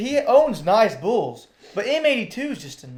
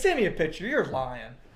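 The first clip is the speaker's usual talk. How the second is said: ordinary talk, nothing marked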